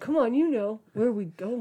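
put-on low voice. Retelling what a 16-year-old kid said, the speaker uses a put-on low voice. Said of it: "Trying to make his voice sound low".

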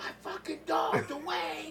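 shrill, high, stretched-out hollering. Retelling what the brothers yelled from inside: imitating someone yelling. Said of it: "him and the brother in there yelling".

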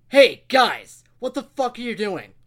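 very loud, high, exasperated, fed-up yell. Retelling the end of the day, yelling at the guys: retelling a yell. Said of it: "I'm going to yell at them".

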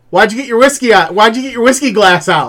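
put-on very high, loud kid voice. Retelling a funny video where a kid questions his dad: imitating a kid's voice. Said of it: "you hear this kid's voice".

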